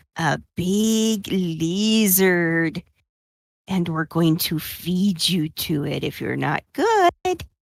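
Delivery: menacing whisper in a put-on character voice. Whispering a threat into the leader's ear, in character: whispering in character. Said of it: "whispers in his ear".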